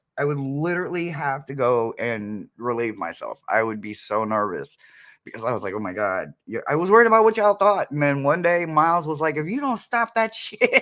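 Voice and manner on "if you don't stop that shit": squeaky, very high-pitched chipmunk voice. Recalling what Miles told him about his nerves before lives: imitating Miles, chipmunk-like. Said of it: "he sounds like a chipmunk".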